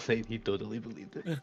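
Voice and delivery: put-on under-breath muttering. Retelling what a character said to another guy, retelling an under-breath mutter. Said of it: "like under his breath".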